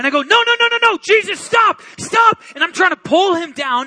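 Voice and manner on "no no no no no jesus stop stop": mock frantic, freaking-out begging, very high and loud. Retelling a dream, reacting to Jesus leaving: imitating own panicked pleading. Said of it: "I start freaking out".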